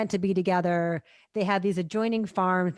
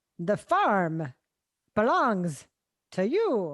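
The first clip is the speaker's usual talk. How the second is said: halting cadence with a slight Irish brogue. Quoting a movie character's line in the actor's bad Irish accent: Christopher Walken's bad Irish accent. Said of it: "He says".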